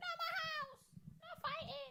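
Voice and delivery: very high, slow, angry screeching mum voice.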